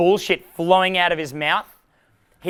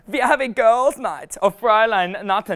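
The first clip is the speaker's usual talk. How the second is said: really bad, clumsy fake German accent; 4 semitones higher, 4 dB louder than usual. Speaker joking with listeners, trying out a german phrase in a really bad german accent. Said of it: "really bad German accent".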